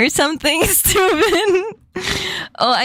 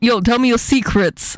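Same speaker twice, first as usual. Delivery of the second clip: put-on New York accent; 5 semitones lower than usual. Wondering how New Yorkers would say secrets, showing it in a New York accent. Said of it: "How would they say secrets in New York?".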